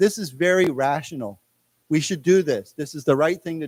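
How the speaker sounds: usual speaking voice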